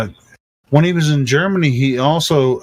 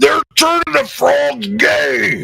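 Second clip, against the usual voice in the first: guttural put-on voice, higher pitch; 13 semitones higher than usual. Answering a request to say the line: guttural Alex Jones voice. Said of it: "the guttural voice that Ro-, that, uh, Alex Jones".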